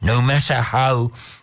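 ordinary delivery, nothing marked

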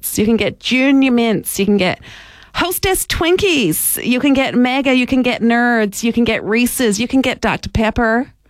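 terrible, high-pitched, put-on American accent. Listing products for sale to viewers, bad American accent. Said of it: "This is a terrible American accent".

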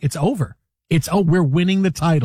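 ordinary delivery

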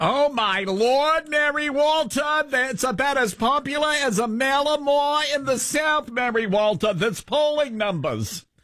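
put-on, shrill, very high Staten Island accent. Talking about Mary Walter's polling numbers, do your Harry Enten impression. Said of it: "Why do you sound like a Yenta from Staten Island?".

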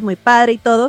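ordinary talk

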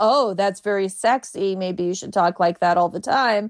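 plain

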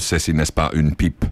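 ordinary delivery

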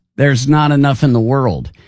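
plain

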